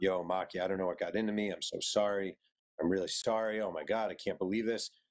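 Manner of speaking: put-on sobbing voice. Retelling a hotel-room voicemail from Kobe Bryant, Kobe Bryant sobbing impression. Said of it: "Kobe Bryant crying, like sobbing".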